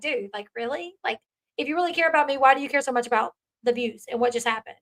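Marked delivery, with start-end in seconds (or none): none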